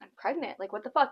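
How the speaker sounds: put-on freaked-out panic, rattled off. Retelling a phone call about being pregnant: retelling freaking out. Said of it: "freaking out".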